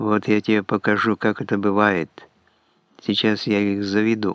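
ordinary delivery

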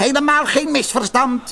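high, spiteful, venomous screeching shriek. An old woman answers the potter, with a venomous shriek. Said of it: "krijste een oude vrouw venijnig".

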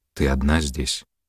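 ordinary delivery, nothing marked

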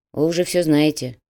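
ordinary delivery, nothing marked

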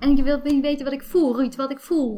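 high, affected, dramatic whining voice.

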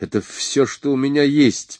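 high, frightened, panicked voice, quavering and trembling. A man answers another man demanding the rest of the money: panicked, trembling voice. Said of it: "паническим, дрожащим голосом уверял он".

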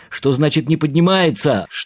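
shrill, very high, loud yelled shout. Hearing bad news about Nona on a phone call, shouting. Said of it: "Что ты орешь?".

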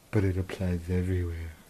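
unsettling, creepy put-on voice. Joking with a co-host after a that's-what-she-said, in a creepy voice. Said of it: "easy with the creepy voice".

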